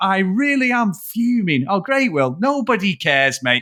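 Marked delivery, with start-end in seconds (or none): 0.0-1.7 mock, unconvincing, angry tough guy voice. Retelling a tv contestant's line, imitating an unconvincing angry tough guy. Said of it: "most unconvincing fucking bad guy".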